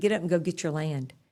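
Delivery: ordinary delivery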